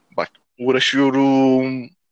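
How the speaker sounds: uğraşıyorum said slowly, stretched and drawn out. Demonstrating how to say a line, stretching the word out: drawn-out uğraşıyorum.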